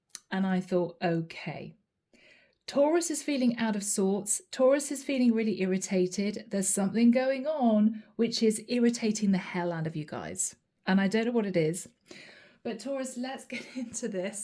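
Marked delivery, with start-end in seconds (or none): 12.6-14.4 soft voice, talking through laughter. Giving a taurus reading to listeners and apologizing, laughing while speaking. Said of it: "I'm sorry I'm laughing".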